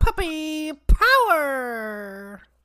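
shrill, booming cartoon puppy yell, very high, swooping, stretched. Rating the show's comedy, the reviewer breaks into a Scrappy-Doo impression. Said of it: "That was a really good impression".

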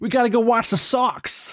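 put-on Boston accent, laid on thick. Two speakers trade lines doing Bostonian accents; fake Boston accent. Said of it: "we both got to do a little bit of a Bostonian".

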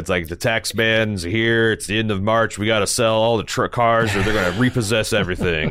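dry, expressionless, deadpan car-dealer sales spiel. Recalling a car-sales pitchman from childhood, the speaker imitates Ed Martin's deadpan pitch. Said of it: "he's just like deadpan".

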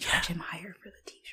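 hushed whisper. Plotting to charge someone more for a t-shirt so he won't hear: whispering. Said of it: "Keep whispering".

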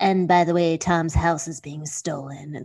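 weird, low, creaky vocal-fry villain voice. Imitating a reality star dropping information: imitating vocal fry villain voice. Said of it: "that weird vocal fry villain voice".

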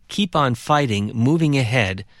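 ordinary delivery

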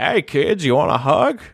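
put-on old cowboy-style voice. Discussing the teddy bear villain in Toy Story 3, doing Lotso's old Western voice. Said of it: "He talks like an old, like, kind of Western guy".

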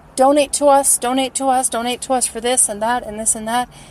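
normal talking voice

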